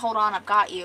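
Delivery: ordinary delivery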